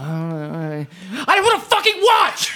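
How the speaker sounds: put-on angry yelling. Picturing Larry being picked from the crowd by a performer: imitating Larry yelling. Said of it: "just, like, yelling".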